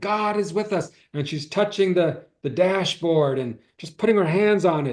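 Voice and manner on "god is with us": mock scream, high-pitched. Retelling a friend screaming during a car spin: imitating a friend screaming. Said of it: "my friend starts screaming".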